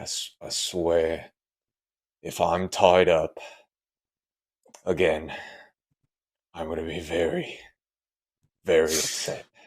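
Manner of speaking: slow, breathy, whispered mumble under the breath. Game master voicing Lockhart with a sigh before he looks down, Lockhart mumbling to himself. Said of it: "he's got to mumble to himself".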